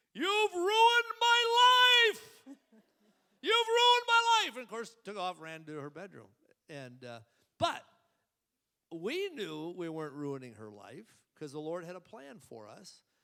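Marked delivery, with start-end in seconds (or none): 0.2-4.6 very high, very loud, shrill, drawn-out wailing scream. Retelling a daughter screaming at news of a family move: imitating Rochelle screaming. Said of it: "Rochelle began screaming, hollering".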